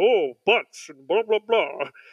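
cartoon dad character voice. Explaining how a cartoon voice changed, imitating early Homer Simpson voice. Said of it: "Homer sounded like this".

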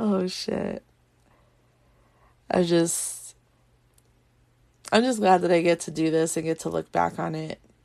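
tearful, crying while speaking. Speaker reflecting on getting to make this recording, crying while speaking. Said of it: "here I am crying my eyes out".

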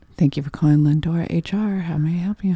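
soft, whispery, gentle and polite voice. Demonstrating how they answer the phone at work, soft, whispery nice phone voice. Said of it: "your way of sounding nice is like a whisper".

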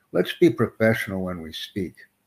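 ordinary talk, nothing marked

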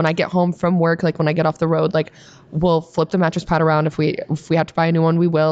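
normal talking voice

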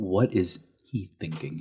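muttered under breath. Retelling a story scene, voicing a character who mutters within earshot, under her breath. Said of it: "says under her breath".

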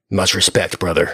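clumsy, botched big wrestler promo voice without growl. Recalling a wrestling event where two stars shook hands: Dwayne Johnson impression. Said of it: "That's my Dwayne Johnson".

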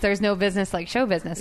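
ordinary talk, nothing marked

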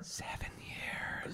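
very slow, soft, spooky whisper.

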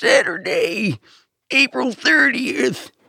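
put-on very high, elderly, hyped-up announcer voice. Topping another speaker's joke about announcer voices: very old man monster truck voice. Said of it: "a very old man doing Monster Truck voice would be like".

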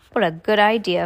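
ordinary delivery

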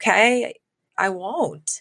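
mildly sad, resigned, going-along tone. Recounting a scene, voicing her reply as he leaves, retelling a sad 'okay'. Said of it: "she just kind of sadly goes".

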